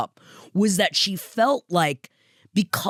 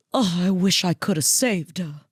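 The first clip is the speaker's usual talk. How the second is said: put-on sadness. Quoting what the author says at the start of the book, retelling a sad remark. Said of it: "she just says sadly".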